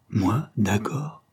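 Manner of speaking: vigorous, vehement protesting tone. The young woman answers Antoine's remark, protesting vigorously. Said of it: "protesta vivement la jeune fille".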